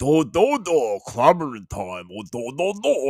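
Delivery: goofy, dim Brooklyn voice. Mocking how a character used to talk: imitating a dopey brooklyn voice. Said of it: "that's his Brooklyn accent".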